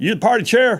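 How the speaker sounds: put-on down-home country accent. Retelling a phone call from a caller who wanted to run: real country sound. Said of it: "had real country sound".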